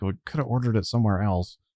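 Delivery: grumbling under breath. A man walks past you out the door, grumbling under his breath. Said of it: "he's kind of like grumbling under his breath".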